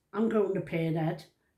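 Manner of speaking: normal talking voice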